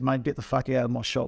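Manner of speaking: plain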